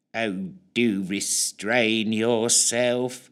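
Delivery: flat, lifeless, dull drawling monotone. Narrator reads a man answering a struggling captive: drawling dull monotone. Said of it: "came back a drawling, monotone voice that was so dull".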